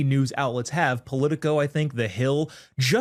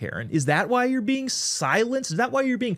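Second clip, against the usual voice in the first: ordinary delivery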